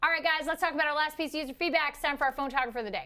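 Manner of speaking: rapid-fire delivery. A host introducing the last piece of user feedback to the guys, very fast. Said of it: "you said that fast, so that sounded like four times the speed".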